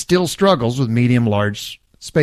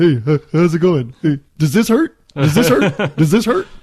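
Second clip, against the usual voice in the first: high-pitched talking-dog voice; 5 semitones higher, 3 dB louder than usual. A speaker acting out their dog zeroing in on them, voicing the dog. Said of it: "That's my dog voice".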